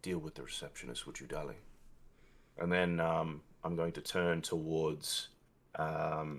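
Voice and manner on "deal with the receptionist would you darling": close, hushed, intimate half-whisper. Playing a character leaning close to Sophia: half-whispering in character. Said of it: "I'm going to whisper into her ear and say".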